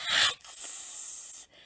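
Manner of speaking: hushed, breathy whisper. Narrating a bat flying above the park at twilight, whispered. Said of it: "he whispered".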